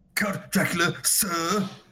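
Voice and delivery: bad put-on English accent. Mocking an actor's English accent, imitating Keanu Reeves English accent. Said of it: "whatever school of acting taught Keanu Reeves how to do an English accent".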